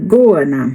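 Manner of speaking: first syllable go in Goana leaned on. Explaining an australian lizard's name in portuguese, say it with stress on go in goana. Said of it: "Dá uma, uma estressada no go".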